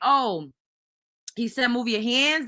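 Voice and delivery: normal talking voice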